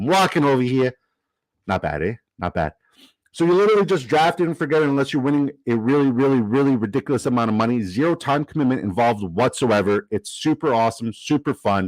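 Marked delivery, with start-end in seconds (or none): 0.0-0.9 put-on New Yorker accent. Mid-ad, asking whether it sounds right, doing a new york accent. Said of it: "Does that sound like a good New Yorker?".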